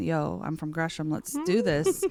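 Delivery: ordinary delivery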